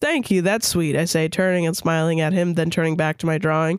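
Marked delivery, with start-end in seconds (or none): none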